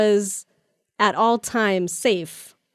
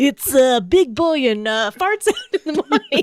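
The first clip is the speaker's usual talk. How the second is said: on-air radio DJ announcer voice, pitched up; 6 semitones higher, 4 dB louder than usual. Mimicking the guy they got to voice a movie character: radio dj voice. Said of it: "He sounds kind of like a radio like a radio D J".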